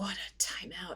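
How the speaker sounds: mock child whispering. Retelling how a young child whispered while walking past: imitating a child whispering. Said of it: "he's just whispering as he walks past".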